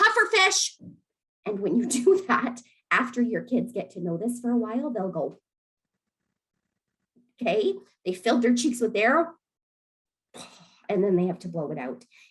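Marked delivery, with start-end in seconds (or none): 0.0-0.8 shrill, loud yelling. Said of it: "you can do something like yell".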